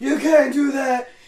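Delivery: slow, high, loud mock angry rant. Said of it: "he was yelling to the guy".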